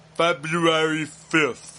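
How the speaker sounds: put-on slow, mumbly, thick French accent.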